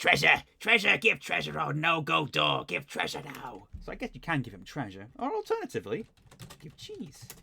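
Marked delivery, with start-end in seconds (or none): 0.0-3.7 rough, raspy, creaky rat creature voice. Narrator voicing a big rat the players talk to: raspy rat voice. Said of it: "The rat rasps".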